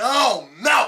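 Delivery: full-volume, very loud, high-pitched yelling. In a repetitive back-and-forth with a friend, the speaker is yelling. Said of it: "Why are you yelling?".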